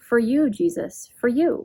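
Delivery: mock sweet, joyful, happy exclaiming voice. Quoting something a woman liked to say, the speaker uses a put-on joyful, sweet voice. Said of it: "in this joyful, I imagine a joyful, sweet voice".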